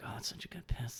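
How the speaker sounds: put-on creepy whisper. Retelling what the guy next to him said: imitating a creepy whisper. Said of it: "He said it under his breath".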